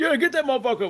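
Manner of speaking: loud, high-pitched yell. Retelling a moviegoer in the theater: imitating someone yelling at the screen. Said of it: "You're yelling at the screen like".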